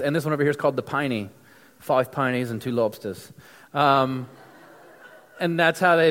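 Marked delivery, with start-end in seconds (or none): 1.8-3.3 awful, clumsy fake Australian accent. Showing Australian money and its nicknames, ordering in a terrible Australian accent. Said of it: "that's probably a terrible Australian accent".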